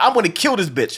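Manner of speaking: put-on furious, angry girl voice. Retelling how one of the girls chased someone through a window: imitating a furious girl. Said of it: "she was so pissed the fuck off".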